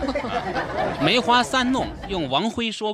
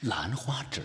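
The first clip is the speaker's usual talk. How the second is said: soft whispered aside. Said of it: "配点这个嘛".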